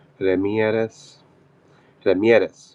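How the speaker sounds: name said the put-on Spanish way. Thanking a commenter while saying their name, with a Spanish accent. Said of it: "I guess I'm saying it with a Spanish accent".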